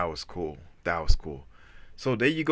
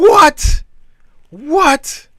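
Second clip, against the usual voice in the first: very loud, very high-pitched exclamation; 14 dB louder than usual. Reacting to news of a quantum computing breakthrough: a little loud. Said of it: "that was a little loud".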